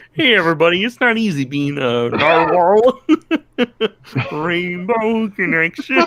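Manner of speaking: very high pitch, slow pace. Asked to bring in the Kermit during a joke: Kermit the Frog voice. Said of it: "Bring in the Kermit".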